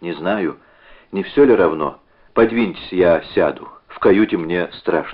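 ordinary delivery, nothing marked

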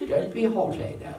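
affected, put-on British accent and pronunciation. Riffing on a favorite word, haughty: put-on british accent. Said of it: "I like to say it with a British accent".

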